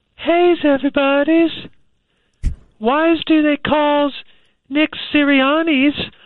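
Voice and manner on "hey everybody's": very high-pitched voice, much higher pitch. Starting a stand-up bit of football jokes for the group, really high voice. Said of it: "Voice really high".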